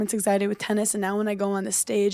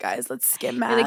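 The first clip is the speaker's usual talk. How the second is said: put-on creaky, nineties teen-movie style voice. Playing a character from a nineties high school movie: nineties high school movie character. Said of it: "a nineties high school movie".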